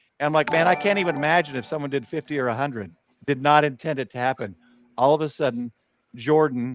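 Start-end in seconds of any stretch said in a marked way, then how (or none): none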